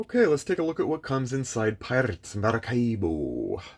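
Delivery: hammy, laid-on, put-on pirate accent with swooping pitch. Announcing a look at what comes inside the box: put-on pirate accent. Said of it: "With that accent".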